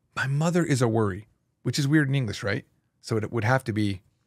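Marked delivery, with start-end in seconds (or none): none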